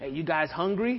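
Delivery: put-on thick, boisterous, laid-on Spanish accent.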